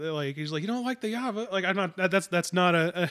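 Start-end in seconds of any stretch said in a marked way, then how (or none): 0.6-1.5 clumsy, bad put-on Australian accent, pitched up. Quoting a character from an Australian movie: bad Australian accent. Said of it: "an attempt at an Australian accent".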